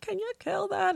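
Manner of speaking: frantic, scared, very high-pitched panic. Retelling seeing a roach while showering, imitating own past panicked plea. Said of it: "I would scream like crazy".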